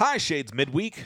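lively, exclamatory, upbeat delivery. A spoken greeting, delivered as an exclamatory greeting. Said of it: "I tried to say that with the exclamation point that it has".

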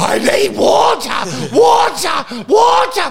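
very shrill, very slow, drawn-out high shrieking squeal. Recounting a long flight where a woman at the back kept calling out, imitating a woman squealing. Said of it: "She kept squealing".

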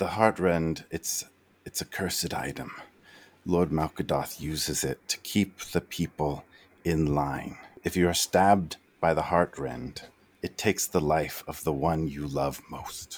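soft, hushed whisper under the breath. Voicing Riggs speaking quietly to the players: Riggs whispering. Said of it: "Riggs whispers to you".

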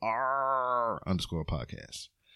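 pirate growl leaning on a drawn-out R. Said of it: "Sound like a pirate when you do it".

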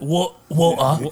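water said with a Cockney accent. Trying ways to say water, this time with a Cockney accent on water. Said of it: "what about like more Cockney English? Yeah. They'd be like".

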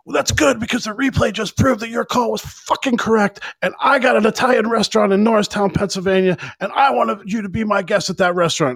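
acted-out, shrill, very high screaming yell. Retelling the coach telling the umpire the replay proved him right: imitating someone yelling. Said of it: "he yelled about his Italian restaurant".

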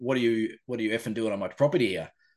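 imitated aggressive man's voice. Speaker retells a man confronting him on his property; imitating an aggressive man. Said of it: "he was quite aggressive".

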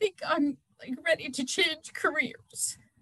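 soft, overcome, emotional voice. After two stressful days of work, the speaker asks a question, emotional. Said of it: "knowing how emotional that is".

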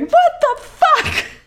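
very high, terrified, shrieking scream. Retelling being terrified by a wildly moving mouse: retelling own past scream. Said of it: "but I'm screaming".

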